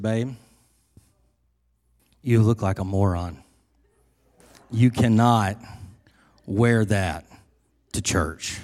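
mock, low, dead-serious tone. Retelling the wife's words about the outfit: imitating someone getting real serious. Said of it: "she got real serious".

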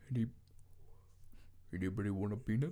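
failed reach for deep voice, kept very quiet. Trying to do an impression, can't get it low enough: bad Andre the Giant impression. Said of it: "I can't get it low enough".

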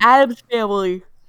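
speaking through a yawn. An exhausted speaker names a film they watched: yawning while talking. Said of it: "Sorry, I yawned".

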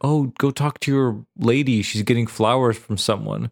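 ordinary talk, nothing marked

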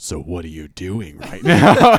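very loud, low, booming, swooping, malicious, sinister delivery. Retelling how his girlfriend's dad's question sounded to him on the phone: mock-malicious tone. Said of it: "like a malicious".

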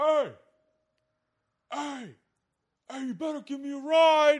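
very loud, high, drawn-out hollering from afar. Retelling someone calling out from far away, imitating a distant shout. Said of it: "off in the distance, we just hear".

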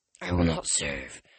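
very low, deep, hurt-sounding, wounded voice. Narrator reads a character's line, in a deep, wounded voice. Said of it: "Tyson said in a deep, wounded voice".

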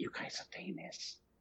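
very quiet, breathy whisper. Retelling what a woman said to the speaker's wife: imitating a whisper. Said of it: "kinda whispers it".

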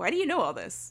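slightly talking-down, mildly condescending tone. Retelling a man's question about fun facts: imitating a condescending tone. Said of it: "kind of condescendingly".

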